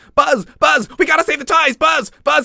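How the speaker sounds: clenched, strained, very high, loud cry. Fan describing how an actor voiced Woody: clenched Woody voice. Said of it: "Woody always being clenched".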